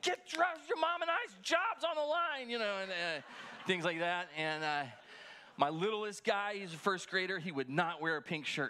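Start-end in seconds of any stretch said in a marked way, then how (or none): 0.0-2.5 very high-pitched yelling. A father recalls yelling at his kids to get dressed for Easter, retelling a yell. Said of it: "I'm yelling".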